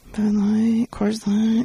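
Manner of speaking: mock under-the-breath mumble. Acting out customers naming their usual beer from the menu, imitating someone muttering. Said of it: "like the under their breath".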